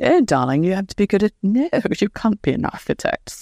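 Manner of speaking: polished put-on British accent. Recalling wanting to be an architect, the speaker imitates their laughing dad in a british accent. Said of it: "goes in his perfect British accent".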